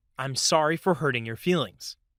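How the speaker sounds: ordinary talk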